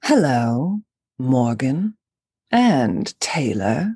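"hello" drawn out slowly in a character voice. Greeting Morgan and Taylor on request in Lady D's voice. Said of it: "say hello to Morgan and Taylor in Lady D's voice".

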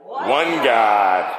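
really loud, shouted proclamation.

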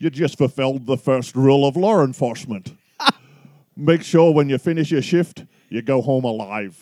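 put-on Scottish accent. Performing a movie quote so the other person can guess the film, in a Sean Connery accent. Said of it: "In a Sean Connery accent?".

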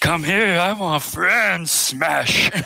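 psychotic snowman voice. Pitching a giant birthday snowman character, psychotic Frosty voice. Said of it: "kind of a partial psychotic snowman".

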